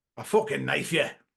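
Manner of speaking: put-on loud, violent Scottish accent. Recalling a Scottish key phrase for locking into a voice: violent Scottish accent. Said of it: "the Scottish one, ... It's something quite violent. It's like".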